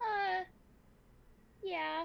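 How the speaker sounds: caught-out, sheepish tone. Playing a lost girl answering whether she got lost in the vents: sheepish. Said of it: "She just says very sheepishly".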